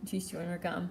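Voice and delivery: ordinary talk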